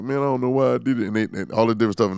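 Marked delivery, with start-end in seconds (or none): 0.0-1.1 high, snivelling, teary whining voice. Retelling how caught thieves act in videos: imitating a crying thief. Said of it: "now they crying like".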